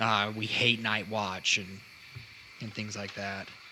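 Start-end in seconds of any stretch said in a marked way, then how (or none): 0.0-1.6 muttered, grumbling complaint under the breath. Voicing two humans who come out complaining: complaining mumble. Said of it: "you hear them just complaining, you know, mumbling".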